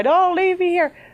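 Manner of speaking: very high, tearful scream. Retelling screaming to the sky on a country road: retelling screaming to the sky. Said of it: "screaming in the middle of the sky".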